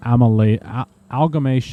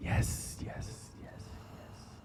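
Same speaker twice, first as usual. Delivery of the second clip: breathy, hushed whispering tree voice. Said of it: "he's whispering, guys".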